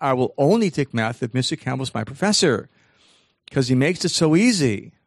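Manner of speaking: normal talking voice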